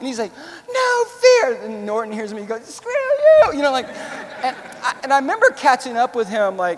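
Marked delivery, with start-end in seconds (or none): 0.7-1.6 very high-pitched, loud shouting yell. Retelling a sergeant yelling at him as gunfire starts; retelling a yell. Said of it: "he's yelling at me".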